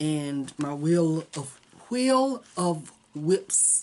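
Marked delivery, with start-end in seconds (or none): 1.9-3.8 slow, drawn-out, careful, deliberate enunciation. Naming a phone app, careful because of false teeth: saying it slowly. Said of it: "I have to say it slowly".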